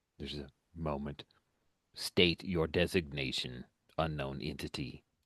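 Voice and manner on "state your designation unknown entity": deep warbling modulated voice, lower, quieter. One of the surrounding figures demands the unknown entity's designation, deep, warbling, modulated voice. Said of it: "in that deep, warbling, modulated voice".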